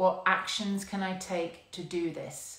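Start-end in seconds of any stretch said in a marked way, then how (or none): none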